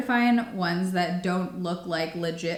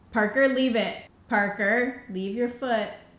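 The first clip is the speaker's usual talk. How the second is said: firm, commanding, motherly voice; 4 semitones higher than usual. Breaking off a product review to speak to parker, in a mom voice. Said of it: "was that my mom voice?".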